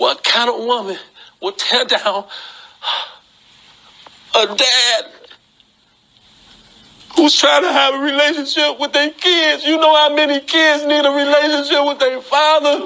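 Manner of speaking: crying, self-pitying voice. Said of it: "crying, and playing victim".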